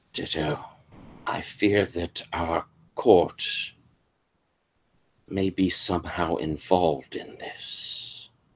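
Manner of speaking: close, hushed whisper right into an ear. Voicing a misty figure who leans close to a player: whispering in character. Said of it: "he kind of whispers into your ear".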